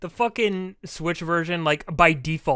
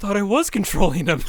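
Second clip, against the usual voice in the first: earnest, guileless, utterly sincere plain delivery; 3 semitones higher, 4 dB louder than usual. Retelling a gaming partner's surprised reply: imitating Brian's honest voice. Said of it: "with the most honest voice I've ever heard".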